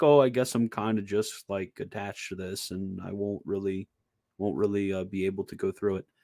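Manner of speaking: mopey voice, trailing off. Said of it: "like, sort of mopey".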